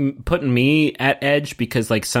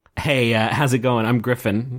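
plain

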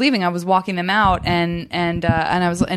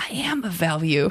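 very slow muttering under the breath; 6 dB quieter than usual. Retelling a remark after a game round: imitating Paul Gilmartin muttering under his breath. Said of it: "just under his breath, he goes".

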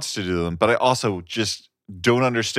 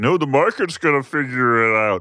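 borrowed frog puppet character voice; 4 semitones higher than usual. Mocking free-market fans who shout about socialism: Kermit the Frog voice. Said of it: "Was that Kermit the Frog?".

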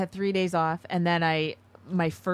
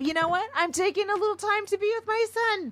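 acted-out drunk-sounding voice, pitched very high. Telling a listener about taking days off, retelling own thought in a mock-drunk voice. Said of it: "You sounded drunk when you said that".

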